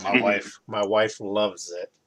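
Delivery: slow, heavily sarcastic delivery. Answering others about a Nerf hobby: sarcastic. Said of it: "That was very sarcastic".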